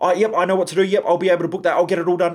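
rapid, high, rattled-off, overeager eager chatter. Imitating an ineffective staff member who doesn't listen, talking really fast. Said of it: "And they talk really fast".

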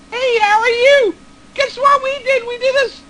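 very high, playful, excited-sounding put-on voice. Speaker retells greeting their dad while kidding around, voice going high. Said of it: "my voice got high".

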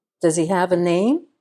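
ordinary delivery, nothing marked

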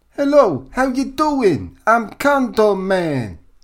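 very high, very slow, loud fake New York accent. Greeting the co-host on a podcast: faux New York accent. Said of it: "That's not a bad impression".

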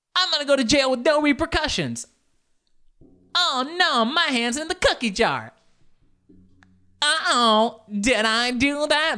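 put-on very high, caught-out, innocent-sounding girlish voice.

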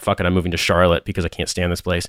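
plain

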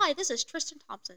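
very proper speaking voice. Hosts discuss a player's new ESPN job; one does a very proper Tristan Thompson impression.

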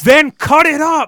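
furious shout, shrill, high, at full blast. Retelling a restaurant owner instructing his son, imitating an angry dad. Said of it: "like he was so angry".

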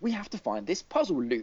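very posh, well-spoken voice. Speaker describes the Professor talking to Luke, in a posh Professor voice. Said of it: "he talks really posh".

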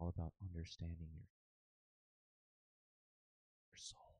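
inspiring whispered delivery. Showing how relationship advice should be said, in an inspirational whisper. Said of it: "say this like in a whisper so it sounds inspirational".

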